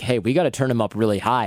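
plain

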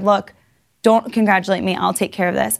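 usual speaking voice

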